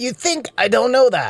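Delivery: high-pitched yelling. In a heated argument, one speaker snaps back at the other; yelling. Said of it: "Then why are you yelling at me?".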